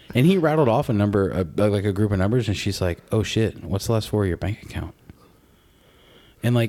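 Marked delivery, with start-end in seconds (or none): 3.1-4.9 imitated deadpan, flat delivery. Retelling an interviewer's question to a celebrity guest: imitating a deadpan interviewer. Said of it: "she's very deadpan, very serious".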